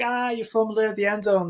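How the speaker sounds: mock gloating, taunting jeer said through laughter. Retelling how a defender taunted the runner who fumbled: imitating a laughing taunt. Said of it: "laughing, like".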